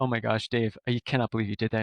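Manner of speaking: acted bursting out laughing. Recalling the interview, the speaker replays talking to Dave, retelling bursting out laughing. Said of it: "I burst out laughing like".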